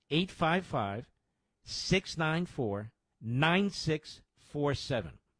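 deliberate slow pace. Host repeats the donation phone number for listeners, slowly. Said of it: "Let me say that slowly".

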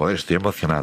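usual speaking voice

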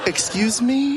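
incredulous "excuse me", pitched high in disbelief.

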